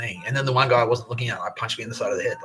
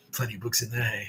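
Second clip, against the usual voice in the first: put-on smug taunting guard voice, quieter; 6 dB quieter than usual. Retelling what the prison guard said on the way out: imitating a smug prison guard. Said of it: "he was all smug about it".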